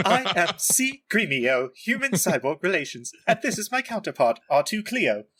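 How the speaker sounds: high-pitched robotic droid voice. Voicing the character Gremio for the group, C-3PO voice. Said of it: "Using the C-3PO voice for Gremio".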